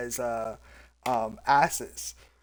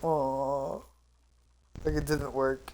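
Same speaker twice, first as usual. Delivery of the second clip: soft, sad, mopey skeleton voice, long "oh"; 7 dB quieter than usual. Imagining how the skeleton reacts when its gas fails, in a sad skeleton voice. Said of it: "the skeleton being very sad".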